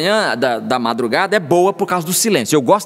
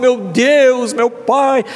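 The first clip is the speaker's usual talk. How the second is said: pompous, weighty, heavy, slow preachy intoning; 6 semitones higher than usual. Describing a style of praying aloud: heavy evangelical prayer style. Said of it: "aquele estilo assim, né? Gongórico, evangélico, evangelicão, pesado".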